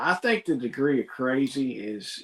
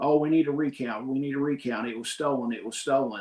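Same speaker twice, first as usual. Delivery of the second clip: ordinary talk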